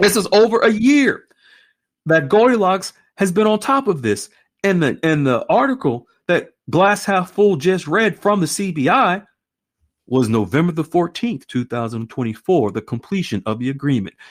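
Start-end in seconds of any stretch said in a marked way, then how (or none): 0.0-4.3 emotional, choked-up delivery, pitched-up voice. Reviewing an article's date for viewers, getting choked up. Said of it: "I'm getting choked up".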